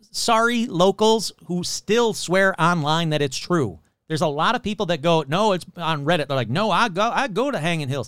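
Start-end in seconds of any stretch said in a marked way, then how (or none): 6.5-8.1 put-on Southern American accent. Imitating locals who swear online the story is true: put-on Southern accent. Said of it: "I don't know why I'm giving them Southern accent".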